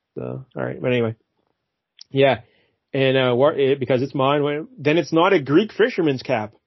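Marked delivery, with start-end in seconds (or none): none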